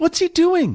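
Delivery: shaky, trembling, very high-pitched crying voice. Watching Iman swing Steve out over the crowd, Celine asks in a trembling voice. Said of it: "her voice trembling".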